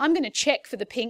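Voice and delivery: ordinary talk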